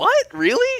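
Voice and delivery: very high, squeaky, incredulous disbelief. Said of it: "And I'm like".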